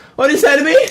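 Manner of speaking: very high, loud, squeaky put-on impression voice. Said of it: "same as my [name] impression".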